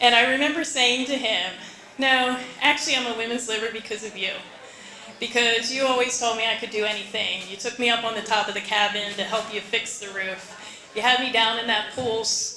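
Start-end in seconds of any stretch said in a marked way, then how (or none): none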